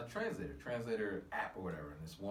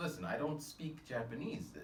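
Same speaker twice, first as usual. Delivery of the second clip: ordinary talk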